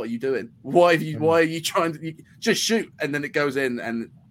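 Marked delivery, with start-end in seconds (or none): 0.0-2.9 put-on high-pitched scream of disbelief, distant. Retelling watching a goal from the other end of the pitch: imitating own screaming. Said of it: "I'm just screaming".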